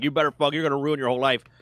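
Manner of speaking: mock tough cop voice, screaming. Retelling how a hard-ass cop screams at someone in crisis: imitating a cop screaming. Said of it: "they're just screaming at him".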